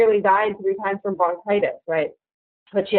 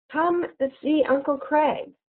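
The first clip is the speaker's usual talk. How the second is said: sly, coaxing, inviting voice, pitched up; 7 semitones higher, 4 dB quieter than usual. She blocks the narrator's way and says it again, in a sly, inviting voice. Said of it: "said again in such a sly, inviting voice".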